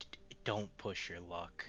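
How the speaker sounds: soft, hushed voice right at the ear. Threatening a captive from behind, said into his ear. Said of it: "just gonna say again in his ear".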